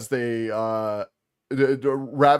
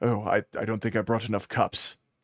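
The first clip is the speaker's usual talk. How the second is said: nervous, jittery vampire voice. Voicing a very nervous vampire worried about tea cups: nervous vampire voice. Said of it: "very nervous vampire sitting there drinking tea".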